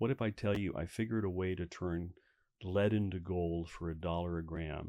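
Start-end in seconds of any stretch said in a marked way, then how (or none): none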